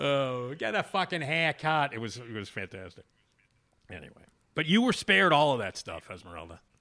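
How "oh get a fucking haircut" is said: put-on Boston accent, quieter and slower. Recalling a passerby's haircut insult, imitating a Boston accent. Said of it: "as a very, you know, welcoming Bostonian".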